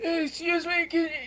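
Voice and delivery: very high, muffled, buried-sounding voice. Game master voices someone under a pile of books as players enter: muffled voice. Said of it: "And you hear a muffled voice".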